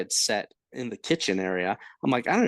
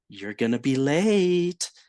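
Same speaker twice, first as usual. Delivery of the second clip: slow, impish half-whisper, "late" drawn out; 2 semitones higher, 3 dB louder than usual. Retelling a voice heard in bed before work: imitating a mischievous little female voice. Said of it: "this mischievous little female voice".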